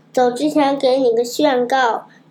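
plain reading voice

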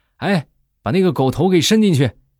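high, loud shout.

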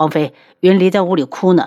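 ordinary delivery

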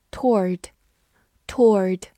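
toward in American pronunciation, said twice.

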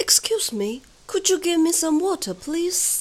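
high, loud British accent with stuffy-nosed sound.

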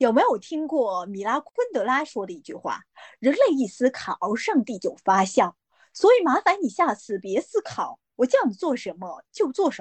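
Mandarin spoken with a Hong Kong accent. Redoing a quoted line on request, this time in Hong Kong-accented Mandarin. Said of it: "那个叫港普普通话版再说一遍啊".

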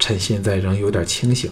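ordinary delivery, nothing marked

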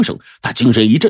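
ordinary delivery

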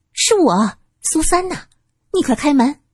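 delighted surprise. Su San calls to her older sister behind the door, pleasantly surprised. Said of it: "苏三惊喜".

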